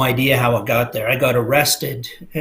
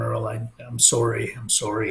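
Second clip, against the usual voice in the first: put-on crying, soft, slow, tearful delivery; 6 dB quieter than usual. Speaker retelling what a crying cousin said to him, imitating someone crying. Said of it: "he's crying and he's going".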